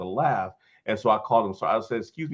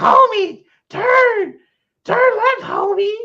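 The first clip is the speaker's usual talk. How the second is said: very high, loud, slow drawn-out call; 9 dB louder than usual. Retelling a cartoon scene, doing a good Marge voice. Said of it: "you actually do a pretty good Marge".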